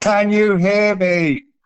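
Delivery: very high, loud, goofy put-on voice. An interviewer greeting two guests and checking they can hear, in a silly put-on voice. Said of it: "I'm putting on that silly voice".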